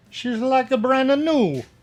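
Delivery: bad put-on Italian accent. Remarking that a part looks brand new, in a bad Italian accent. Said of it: "Are you Italian now?".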